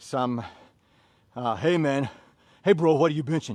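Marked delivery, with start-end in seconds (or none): 1.6-3.6 boastful, bragging gym bro swagger. Describing strength training, acting out a gym-goer who brags: imitating a bragging gym-goer. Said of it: "so that you can brag".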